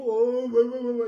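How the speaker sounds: loud, inflated, puffed-up show-off tough talk. Speaker mocks someone who acts tough on social media: mocking a puffed-up voice. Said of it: "tu viens gonfler la voix hein".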